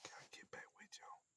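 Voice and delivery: whispered, very quiet, barely audible. Signing off to listeners, whispering. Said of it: "I don't know why I'm whispering for".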